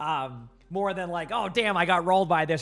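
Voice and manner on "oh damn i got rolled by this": mocking, dry, sarcastic aside. Giving an example of a sarcastic gaming remark: sarcastic. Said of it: "That's more sarcasm".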